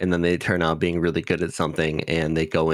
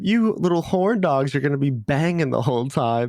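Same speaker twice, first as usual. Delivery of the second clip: put-on flustered girl voice, higher pitch; 9 semitones higher than usual. Retelling a scene where Yui is invited on a trip: imitating Yui, flustered and red-faced. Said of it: "Yui just gets so red in the face".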